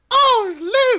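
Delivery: very high forties-film faux British accent, oh stretched. Mocking an actress's line delivery: Princess Leia's faux British accent. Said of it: "she talks like how Lucille Ball would talk".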